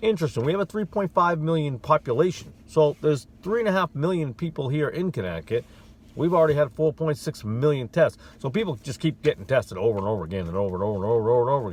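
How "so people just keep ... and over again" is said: hurried, fast, rattled-off speech. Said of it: "Forgive me if I'm talking fast".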